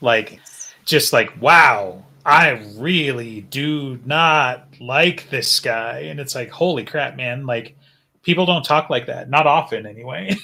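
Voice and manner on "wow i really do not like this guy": heavy, over-strong emphasis on every single word. Show how strongly Jim spoke about a guy he disliked, imitating Jim's really strong emphasis. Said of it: "Jim's emphasis was also like really, really strong".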